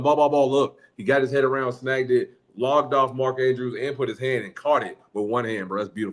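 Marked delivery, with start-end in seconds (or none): 0.0-0.8 loud hollering yell. Retelling yelling on the sideline as the ball is in the air: imitating own yelling. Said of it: "I'm yelling".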